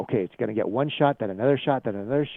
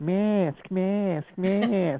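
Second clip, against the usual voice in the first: put-on high-pitched woman's New York accent; 6 semitones higher than usual. Imitating a lady heard down there, in a New York accent. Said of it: "with a New York accent".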